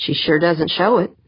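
ordinary delivery, nothing marked

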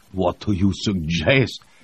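growling, short-tempered, impatient. A cosmonaut answers his comrade's question: growled. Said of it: "Voznesensky growled".

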